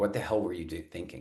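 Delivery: ordinary delivery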